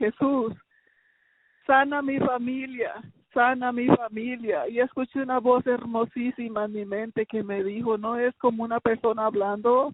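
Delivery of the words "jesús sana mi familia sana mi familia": tearful, crying, pleading tone. Retelling a prayer cried out to Jesus while driving: retelling a tearful cry. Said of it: "manejando y llorando, le dije".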